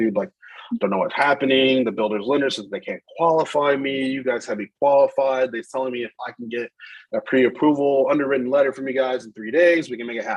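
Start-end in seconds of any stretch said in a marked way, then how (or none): none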